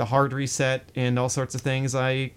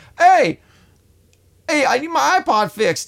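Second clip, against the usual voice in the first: bad, very high, loud New Jersey accent; 13 semitones higher, 8 dB louder than usual. Retelling how a man yelled at you about his iPod, in a bad New Jersey accent. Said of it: "he had this East Coast accent".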